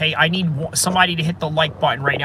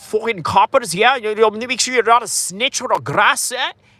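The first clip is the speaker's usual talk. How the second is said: put-on Scottish accent, male voice; 5 semitones higher than usual. Quoting a hard-to-understand scottish man talking about coppers, attempted scottish accent. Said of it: "I'm going to try to do a Scottish accent".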